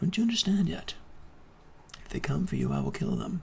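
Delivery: hushed, very low whisper close in. Leaning forward, she whispers in the listener's ear: whispering in your ear. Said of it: "she kind of whispers in your ear".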